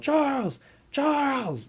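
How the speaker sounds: very high, shouted yell. Retelling a scene where a machine gun is coming up to him, imitating Dennis Hopper yelling. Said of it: "Dennis Hopper's yelling".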